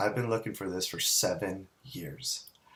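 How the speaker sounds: put-on utterly solemn, grave, most earnest delivery. Retelling what a man told the speaker, imitating his most serious tone. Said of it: "in the most serious tone".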